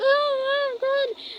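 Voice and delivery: very high pretend sobbing. Retelling pretending to cry in class, imitating own fake crying. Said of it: "then I started to pretend to cry".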